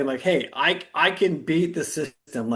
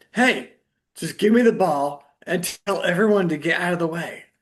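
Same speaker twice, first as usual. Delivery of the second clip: mock, insistent, demanding yell; 3 semitones higher than usual. Retelling a player yelling at the coach: imitating someone yelling. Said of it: "yelling at the coach and being like".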